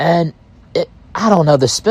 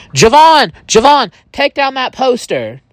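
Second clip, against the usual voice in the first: outright, pitched-up, loud scream; 9 semitones higher than usual. Retelling shouting at someone to take down a poster: retelling own scream. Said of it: "And I screamed".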